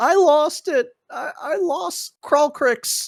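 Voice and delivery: very high, tearful sobbing words. Voicing a tribe member who looks at the cage, crying while speaking. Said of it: "he starts crying. He's like".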